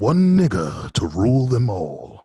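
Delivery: put-on voice, loud and swooping. Showing someone how to close out the skit, doing that voice. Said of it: "you gotta close us out in that voice".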